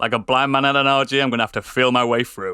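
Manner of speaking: mock flat, expressionless tone. Quoting a line from the Naked Gun films: deadpan Leslie Nielsen impression. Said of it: "It's when he reads that one line".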